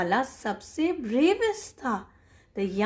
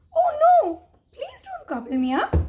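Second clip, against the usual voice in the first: tiny, very high little-goat voice; 5 dB louder than usual. Reading a story to a child, the youngest goat pleading: tiny voice. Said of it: "said the youngest billy goat Gruff in a tiny voice".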